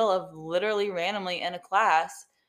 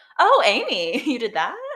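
slow, raised, backhanded tone; 5 semitones higher, 8 dB louder than usual. Imitating a professor making a backhanded comment: imitating a backhanded comment. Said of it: "very good at making backhanded comments".

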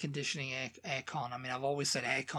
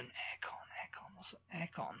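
confused, puzzled whisper; 3 semitones higher, 11 dB quieter than usual. Imitating someone who has trouble with the accent: imitating someone confused by the accent. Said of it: "someone who's not got a bit of trouble with the accent going".

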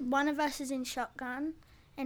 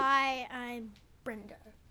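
ordinary talk, nothing marked

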